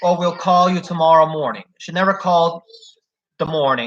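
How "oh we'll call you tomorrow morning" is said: ordinary talk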